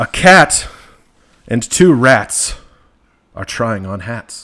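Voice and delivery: dramatic reading. Asked for more drama, reading the next rhyming line aloud, dramatic reading. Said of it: "I need a little more drama".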